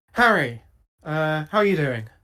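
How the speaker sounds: quick feminine voice. A voice comes through next to a listener's ear, greeting Harry: [name]'s feminine voice. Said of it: "a kind of a feminine voice".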